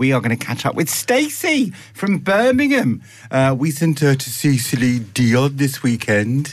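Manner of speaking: put-on Brummie Birmingham accent. Show host previews a later segment on air, in a Brummie accent. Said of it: "That's my Brummie accent".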